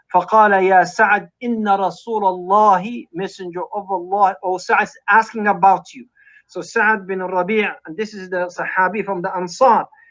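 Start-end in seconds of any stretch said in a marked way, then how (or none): none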